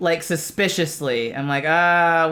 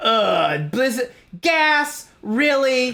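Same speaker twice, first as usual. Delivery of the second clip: put-on annoyed grumbling, higher-pitched; 6 semitones higher than usual. Retelling getting gassed in a porta potty: imitating being annoyed. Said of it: "I'm just annoyed".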